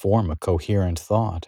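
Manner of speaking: ordinary delivery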